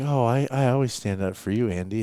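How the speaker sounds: lovestruck, smitten, doting, gushing tone. Teasing a co-host by imitating him sounding in love: imitating someone lovestruck. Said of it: "it's like he's in love or something".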